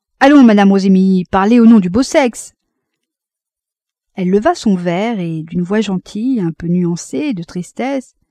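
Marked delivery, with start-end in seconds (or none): 0.2-2.5 loud exclamation. Beausire calls out to madame rosémilly during the toasts, exclaiming. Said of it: "Beausir s'écriait".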